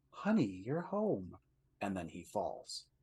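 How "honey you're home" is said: play-acted sugary, honeyed, sweet pitched-up voice. Retelling a story, a woman turns to look at him; mock-sweet voice. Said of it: "in like this sweet voice".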